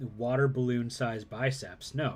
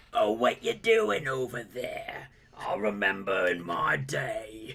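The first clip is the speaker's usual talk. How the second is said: put-on old smoker lady voice, swooping, "day" drawn out; 3 semitones lower than usual. Imitating an old smoker lady: imitating an old smoker lady. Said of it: "my old smoker lady".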